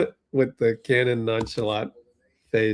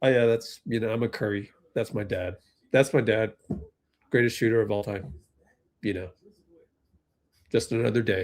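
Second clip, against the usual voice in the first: dry deadpan delivery with no joy; 3 dB quieter than usual. Imitating Cannon always sitting there with a straight face: deadpan Cannon impression. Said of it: "He's always just sitting there like".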